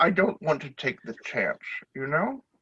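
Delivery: speaking with lips tucked inside the mouth. In a tabletop game, a gang member explains why he hides his lips; talking with lips sucked in. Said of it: "You see the man kind of sucking in his lips. Is like, Why are you sucking on your lips? I don't want someone to accidentally fall into me, and their lips land on my lips, and then we've kissed. / You".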